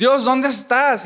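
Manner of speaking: loud, slow, anguished crying out.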